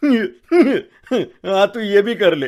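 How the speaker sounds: loud, slow ghost voice talking through laughter. Voicing a ghost mocking a trapped man: ghost laughing while talking. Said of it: "भूत हंसते हुए बोलता है".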